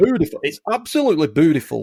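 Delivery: loud commercial sales voice. Praising a house's garden and rooms: Bernard Matthews voice. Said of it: "Sounded like Bernard Matthews then".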